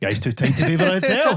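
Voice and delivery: mock English-accented voice.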